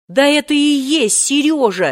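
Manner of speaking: desperate, high exclamation. Two friends answer his surprised question together, exclaiming in despair. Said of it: "с отчаянием воскликнули".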